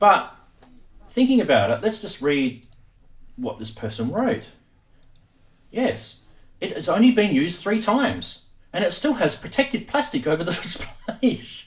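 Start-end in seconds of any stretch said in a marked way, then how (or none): 1.8-11.7 speaking with stifled laughter, barely keeping straight face. Reading aloud to viewers what a person wrote, holding back laughter. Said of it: "I'm laughing because you're about to see a photo".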